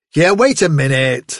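plain reading voice

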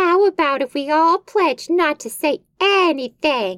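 put-on dopey, dim-witted voice, high-pitched. Narrator reading Billy's suggestion to David: stupid Billy voice. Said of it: "I'll just give Billy a stupid voice".

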